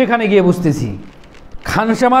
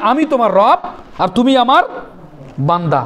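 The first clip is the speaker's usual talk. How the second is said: usual speaking voice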